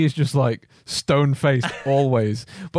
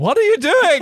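very high, loud, worried, acted-out tone; 5 dB louder than usual. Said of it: "just 'cause of you going".

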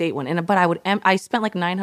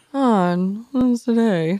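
gloomy put-on donkey voice, higher pitch; 4 semitones higher, 3 dB louder than usual. Joking about feeling gloomy, doing Eeyore from Winnie the Pooh: Eeyore voice. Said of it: "I'm like Eeyore from, uh, Winnie the Pooh".

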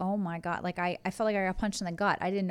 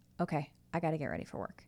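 mock deadpan, matter-of-fact, dead straight, unbothered; 3 semitones lower, 6 dB quieter than usual. Retelling a husband's reply to the pregnancy news: imitating a deadpan reply. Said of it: "he deadpanned me and goes".

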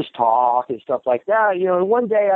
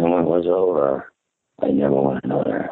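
put-on movie narrator voice, lower. Showing the impression promised to a friend: Martin Sheen impression. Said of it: "Martin Sheen, Apocalypse Now opening scene".

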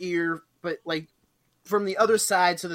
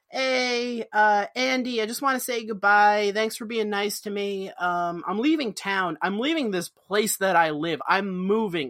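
normal talking voice

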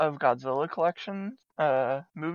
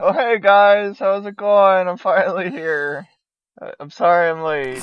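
booming, very loud, bad fake voice; 3 semitones higher, 9 dB louder than usual. Pretending to arrive late to the podcast: Kyle impression. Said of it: "it's not Kyle's voice".

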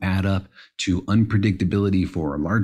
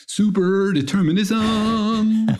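heroic, high-pitched, proclaiming superhero voice; 14 semitones higher than usual. Saying a podcast question the way it might be announced, Superman voice. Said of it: "in a sort of like Superman voice".

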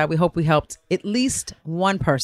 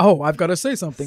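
mock very grand-sounding manner. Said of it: "She's very grand".

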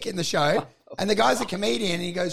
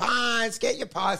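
put-on old man street vendor call, kept mild; 3 semitones higher than usual. Retelling an old man wandering through the crowd with pies: imitating an old man yelling. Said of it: "wandering through the crowd yelling".

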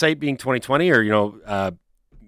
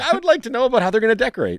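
put-on, very high, swooping, bursting with excitement; 10 semitones higher than usual. Quoting the other speaker's earlier question back to them, imitating someone's excited voice. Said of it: "your voice was so excited".

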